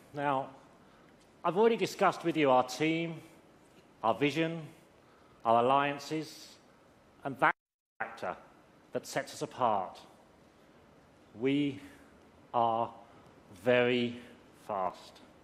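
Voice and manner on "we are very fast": very slowly drawn out, deliberate delivery. Describing the team after thanking Ding for support: said slowly. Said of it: "I said that slowly".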